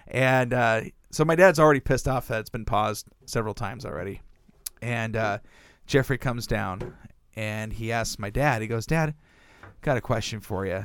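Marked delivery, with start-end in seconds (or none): 8.8-10.8 put-on sober, earnest, kind of serious tone. Retelling a sibling approaching their dad with a question: retelling a serious tone. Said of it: "Kind of serious tone".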